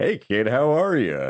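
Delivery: creepy, slightly pervy put-on cartoon-character voice. Greeting the other host in a Mayor West voice. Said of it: "was that your Mayor West voice?".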